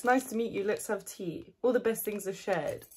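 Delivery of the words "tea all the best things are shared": ordinary talk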